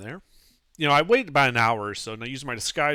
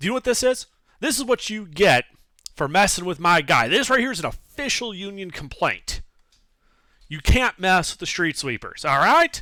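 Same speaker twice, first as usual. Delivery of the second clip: heated, angry scolding yell; 7 semitones higher than usual. Playing a gnome who pokes someone with a paper, yelling angrily. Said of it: "I'm like yelling at him".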